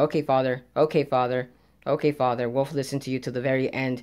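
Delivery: low, flat, droning robotic monotone. Mocking characters who blindly obey their father, monotone mindless-bot voice. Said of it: "in a very monotone, monotone way".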